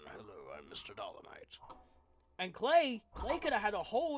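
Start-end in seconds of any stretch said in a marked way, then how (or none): 0.1-1.6 put-on voice of an old British man. Voicing his character as an old British man: Mister Dolomite old British voice. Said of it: "like an old British man".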